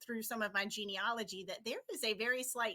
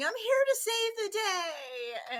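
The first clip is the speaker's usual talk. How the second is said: very high, very slow, stretched-out holler; 11 semitones higher, 7 dB louder than usual. Retelling running down a long voting line as Supergirl: retelling own past yell.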